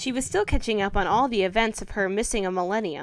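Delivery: ordinary delivery, nothing marked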